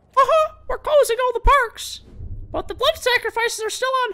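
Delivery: squeaked out, high-pitched and loud. Showing off a best Mickey Mouse voice with an announcement about the parks, Mickey Mouse impression. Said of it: "That's my best Mickey Mouse impression".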